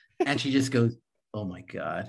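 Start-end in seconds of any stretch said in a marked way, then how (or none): 1.4-2.1 repulsed, totally disgusted tone. Retelling someone's reaction to a movie line: imitating total disgust. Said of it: "In total disgust".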